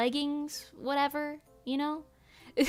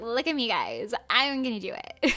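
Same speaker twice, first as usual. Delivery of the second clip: put-on swooping, sing-song, bragging show-off girl's voice; 3 semitones lower than usual. Retelling a girl bragging before chopping firewood: imitating how she talks. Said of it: "Like, she talks like that".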